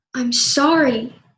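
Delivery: hostile, aggressive, angry, insincere tone. Showing how tone changes the meaning of an apology, aggressive angry tone. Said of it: "one is very aggressive and angry".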